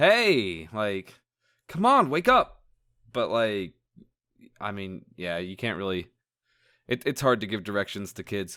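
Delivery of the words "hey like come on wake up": put-on impatient child voice, swooping, very slow and drawn out. Explaining how kids act when a parent won't wake: imitating an impatient kid. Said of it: "they get impatient. They're like".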